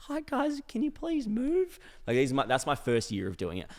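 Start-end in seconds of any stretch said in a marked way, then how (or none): 0.0-1.8 put-on nervous, trembling, timid voice, very high. Retelling asking aggressive people to move as a nervous young worker: imitating own shaky nervous voice. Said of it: "twenty-year-old shaking".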